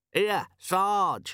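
tinny, metallic voice. Reading a novel, a voice calls to the sergeant from inside the fish, metallic voice from inside. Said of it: "came a metallic voice from the belly of the fish".

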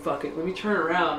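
normal talking voice

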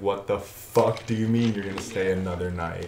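ordinary talk

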